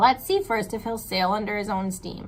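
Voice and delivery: ordinary talk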